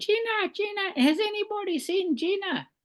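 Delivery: very high, mock shouted calling tone. Retelling how a man searched for Gina: imitating Tumpty Turner shouting. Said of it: "he starts shouting".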